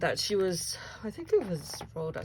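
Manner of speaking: words stretched out, talking through a yawn. Chatting about a bead haul and trying to recall a name, yawning while talking. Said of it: "sorry, I'm yawning now".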